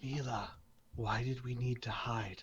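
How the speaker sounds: barely audible, very quiet, hushed, careful voice. Playing a hiding character who asks a companion why: very quiet voice. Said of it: "Al will very quietly say".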